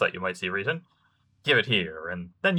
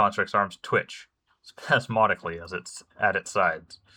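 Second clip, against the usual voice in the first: usual speaking voice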